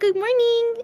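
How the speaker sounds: character voice pushed very high. Greeting the group in a new voice for Luca. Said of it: "This is my new voice for Luca".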